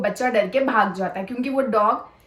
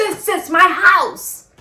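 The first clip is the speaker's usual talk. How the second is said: mock angry shout, much higher, louder, slower; 7 semitones higher, 8 dB louder than usual. Retelling a quarrel, she repeats what the man shouted: retelling an angry shout. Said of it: "जोर से ऐसे चिल्लाया।".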